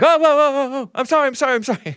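very high-pitched, cowering, cowardly pleading. Imitating shooters confronted by police: imitating a cowardly plea.

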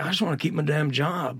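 put-on Southern drawl, factory worker voice. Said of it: "he's got like a real southern drawl".

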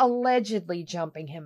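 snarky allegedly with heavy air-quote stress. Reporting a fighter's claim, saying allegedly with heavy sarcastic air quotes. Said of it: "I say that with those heavy, sarcastic".

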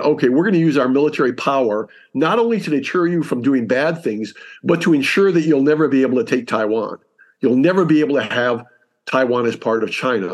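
ordinary delivery

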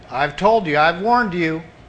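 ordinary delivery

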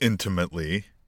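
heavy stress on the word "intimately". Discussing another interesting part of a report: stress on INTIMATELY. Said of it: "I stress the word intimately".

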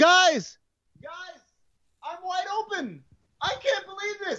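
loud high calling out. Retelling Larry Bird shouting to his teammates: imitating Larry Bird yelling. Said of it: "He's yelling at his teammates".

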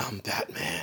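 breathy, very hushed whisper, barely voiced. Quote the 1989 Batman's reply when asked what he is, in a whispery Batman voice. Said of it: "With that whispery voice".

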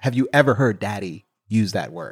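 normal talking voice

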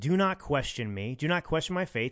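ordinary delivery

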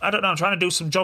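usual speaking voice

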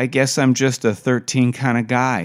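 ordinary delivery, nothing marked

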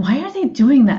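harsh, intensely disapproving, critical tone. Retelling what other students on a bus asked: imitating intense criticism. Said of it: "in a voice of, like, intense criticism".

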